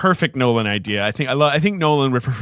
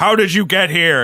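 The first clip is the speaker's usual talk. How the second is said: booming, frightening, scary voice, pitched up; 6 semitones higher, 4 dB louder than usual. Retelling a movie scene where a wall computer yells at Coop, booming, scary voice. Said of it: "in this like booming, scary voice".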